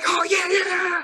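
very high-pitched, shrill shouting. Showing how someone might yell in a tense conversation, yelling. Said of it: "I don't have to yell like".

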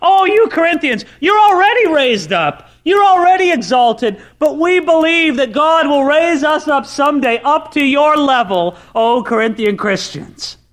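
acted backhanded sarcasm. Paraphrasing Paul's words to the Corinthians: sarcastic Paul imitation. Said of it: "I hope you can catch the sarcasm here".

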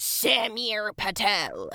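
high, swooping, drawn-out shrieking witch voice. A man calls out someone's full name, shrieking in his witch voice. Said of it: "Seb shrieked in his trademark witch voice".

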